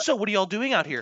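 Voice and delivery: mock angry teacher voice. Retelling how a teacher who found students waiting outside reacted: imitating a furious teacher. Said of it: "she gets super pissed".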